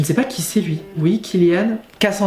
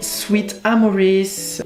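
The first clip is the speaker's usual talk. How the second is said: spoken in an English accent; 2 semitones higher than usual. Reading game dialogue aloud, saying the school's name: english accent. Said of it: "Pourquoi je prends un accent euh, anglais à chaque fois que le nom de l'école est spécifié?".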